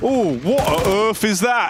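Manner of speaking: put-on British accent, "earth" said as "urf". After practising how to pronounce words, trying out the phrase in a British accent. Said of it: "And now you can say what on earth in a British accent".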